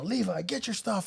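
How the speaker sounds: play-acted, high-pitched, bossy scream. Retelling a rush to gather the kids: retelling own screaming at a kid. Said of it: "screaming at the kid".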